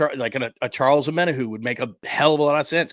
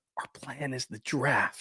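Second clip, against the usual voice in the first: hushed, very quiet whisper; 10 dB quieter than usual. Discussing 49ers drafts, the speaker quotes the team's plan, whispering. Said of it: "I don't know why I'm whispering that".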